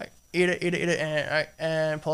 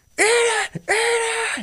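mock scream, much higher and louder; 4 dB louder than usual. Recounting a castmate pinning them down during a shoot, retelling a scream. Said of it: "that's exactly how he's screaming it".

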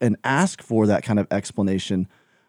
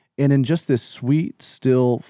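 ordinary talk, nothing marked

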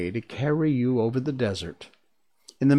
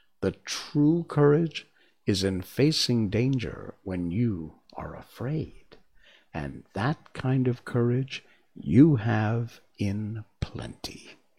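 ordinary delivery, nothing marked

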